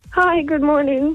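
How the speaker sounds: nervous, trembling, shaky, high voice. A caller greeting the hosts, in a shaky, nervous voice. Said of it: "My voice sounds so shaky".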